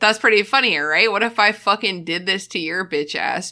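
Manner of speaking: plain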